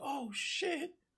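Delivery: high, startled, shocked squeak. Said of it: "He's like".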